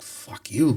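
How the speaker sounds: put-on broken-English accent. Retelling what the mother said on the phone: imitating broken accent. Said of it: "In her broken accent".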